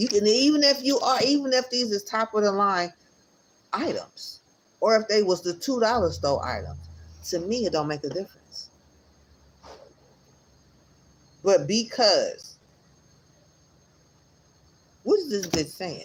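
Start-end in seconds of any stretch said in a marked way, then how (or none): 7.3-16.1 getting angry, slower. Reacting to what a woman is saying, the speaker is getting mad. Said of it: "I'm getting mad".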